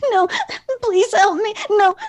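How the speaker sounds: very high, sobbing, panicked, gibbering voice. A character crawls away from the high priest, sobbing and begging in panic. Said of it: "like he's sobbing and trying to crawl away from the high priest".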